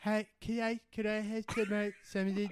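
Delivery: soft voice with a fake speech impediment. Retelling pretending to be a different person, in an Adam Sandler voice with a fake speech impediment. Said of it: "I pretended to have a speech impediment".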